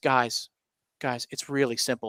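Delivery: dropped-voice hushed whisper, very quiet. Retelling how a coach dropped his voice to a player, the speaker reenacts a coach's whisper. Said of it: "He whispers".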